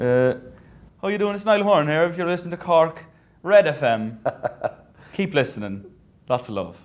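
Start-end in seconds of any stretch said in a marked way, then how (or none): 1.0-6.8 Cork Irish accent, higher pitch. Interviewer asks the guest to say the station's name, in a Cork accent. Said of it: "say Cork's Red F M in a Cork accent for us?".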